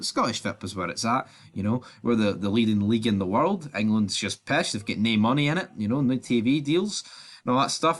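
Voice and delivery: ordinary talk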